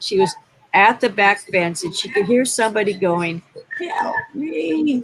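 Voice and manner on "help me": funny, small, high, stressed-out cry. Retelling a voice a woman heard at the back fence, imitating a funny little stressed-out voice. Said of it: "with a funny little stressed out voice".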